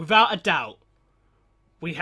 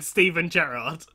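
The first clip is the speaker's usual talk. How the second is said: ordinary talk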